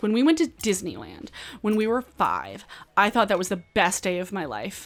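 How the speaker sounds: earnest, wholehearted, dead-sincere, sing-song delivery. Reacting to a movie scene, quoting a character's line, imitating an earnest delivery. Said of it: "She says this in the most earnest way".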